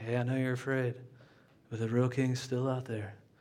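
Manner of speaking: soft whisper. Acting out a reassurance to someone who is afraid: whispering. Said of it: "let me whisper".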